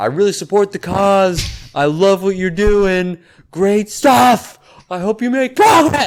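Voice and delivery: loud, high-pitched screaming. Retelling screaming back at people who waved flags: imitating own past screaming. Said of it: "and then I started screaming".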